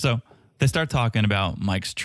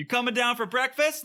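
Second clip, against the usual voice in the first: high-pitched mock yell. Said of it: "someone yells, yells up to him".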